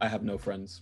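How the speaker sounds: flat, dry character voice. Acting out a book scene in a deadpan Glotka voice. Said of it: "Just deadpan Glotka".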